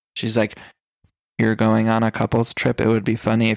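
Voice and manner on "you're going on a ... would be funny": put-on flat, deadpan delivery. Quoting Riley's dry humor to listeners, imitating Riley's monotone. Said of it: "the most monotone I've ever heard anyone".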